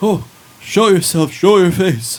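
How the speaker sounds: mysterious, high, loud calling voice.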